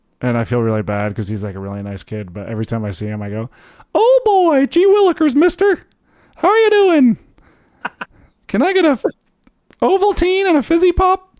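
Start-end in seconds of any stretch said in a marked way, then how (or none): 4.0-11.2 very high, squeaky cartoon voice. Acting out what he says to a kid in the neighborhood, Mickey Mouse voice. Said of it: "that was an amazing Mickey Mouse voice".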